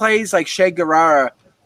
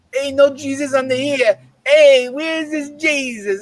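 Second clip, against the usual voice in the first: put-on, pitched-up Italian mobster tough-guy voice; 7 semitones higher than usual. Acting out a scene of a man walking around town with a gun, imitating an Italian mafioso. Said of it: "playing like a like a Dago fucking uh, mafioso".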